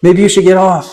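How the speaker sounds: high-pitched yelling. Voicing a character as a rumbling mouth starts opening: yelling. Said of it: "and Luca yells".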